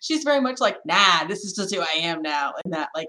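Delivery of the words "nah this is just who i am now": raspy, easygoing, rasped-out voice. Imitating how an actor talks about herself: raspy Natasha Lyonne voice. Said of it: "raspy Natasha voice".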